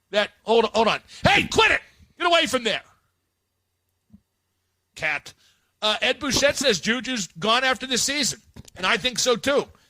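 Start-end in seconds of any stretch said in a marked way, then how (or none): 1.2-2.8 high-pitched, loud yell. Yelling at a cat while on the air: yelling at a cat. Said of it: "Is he yelling at a cat".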